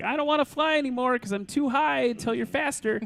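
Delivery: put-on whiny little kid voice, very high. Voicing a plane that doesn't want to fly: put-on whiny child voice. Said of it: "Yours kinda sounded like a whiny child".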